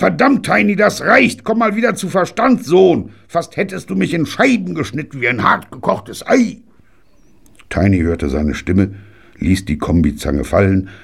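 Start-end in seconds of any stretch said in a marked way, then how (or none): 0.0-6.6 very high, shrill, bellowing roar. Still on the ground after nearly being hit, a grandfather calls to his grandson, bellowing. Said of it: "brüllte Granddaddy".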